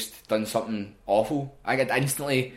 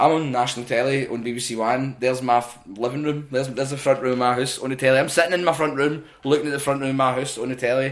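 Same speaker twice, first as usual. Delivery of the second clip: plain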